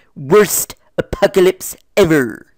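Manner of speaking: put-on nerdy cartoon voice, pompous pronouncing manner. Running through Simpsons character impressions one after another: Comic Book Guy impression. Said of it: "that's the comic book guy".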